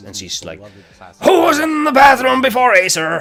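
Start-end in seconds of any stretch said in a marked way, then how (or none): 1.2-3.2 put-on very high, shrill, furious delivery. Retelling what the teacher said about the bathroom: imitating a furious teacher. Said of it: "she is furious".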